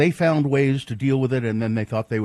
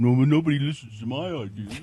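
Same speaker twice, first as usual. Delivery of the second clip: put-on complaining voice. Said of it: "That's your [name] impression?".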